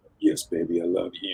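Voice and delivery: voice dropped as deep as it goes. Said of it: "that super deep voice".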